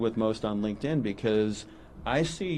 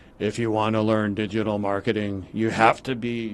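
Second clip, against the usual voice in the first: read in a stock AI narrator voice; 2 semitones lower than usual. Describing YouTube marketing videos, mocking how the narrator sounds: Batman-like YouTube narrator voice. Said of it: "you've heard that voice where he's like".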